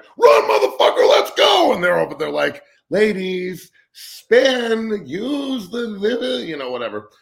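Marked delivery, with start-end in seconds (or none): 0.2-1.7 very loud, full-blast hollering yell. Describing the gymnastics place across the street, the speaker re-enacts their own yelling. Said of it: "I'm over there yelling like".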